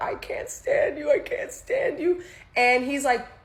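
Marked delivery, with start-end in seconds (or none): 0.0-2.2 acted very high sobbing outburst, tearful wailing scream. Recounting an argument with this guy, retelling screaming while crying. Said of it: "I'm screaming. I'm crying".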